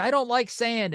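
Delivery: play-acted, very high-pitched yell. Retelling calling out to a parade crew: retelling a yell. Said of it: "I yelled at one of the".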